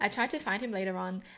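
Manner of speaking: ordinary delivery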